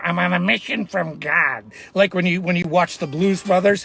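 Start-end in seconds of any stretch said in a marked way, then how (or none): 0.0-1.7 put-on in a Chicago accent. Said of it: "that was my Chicago accent".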